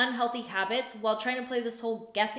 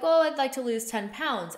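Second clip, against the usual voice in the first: normal talking voice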